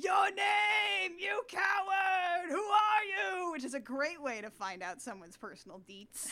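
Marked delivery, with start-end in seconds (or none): 0.0-3.5 put-on very slow, loud, high yell, one word drawn out. Retelling a film chase scene: imitating Edgar Allan Poe yelling. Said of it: "Edgar Allan Poe is yelling".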